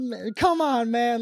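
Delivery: put-on near-crying voice. Retelling being hit while driving: imitating own near-crying plea. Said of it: "almost crying".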